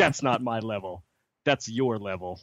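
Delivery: put-on firm, no-nonsense tone. Retelling how Bobby, on the phone, firmly talked to a kid: imitating firm talk to a kid. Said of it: "he's firmly talking to one of the kids".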